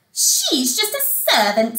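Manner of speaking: ordinary delivery, nothing marked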